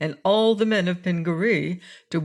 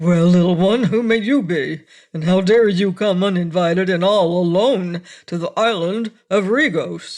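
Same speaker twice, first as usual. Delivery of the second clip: loud, rough, gruff captain voice; 6 dB louder than usual. Reading a story aloud, the big captain questions the boy: gruff voice. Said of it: "Said the big captain Buzzub in a gruff voice".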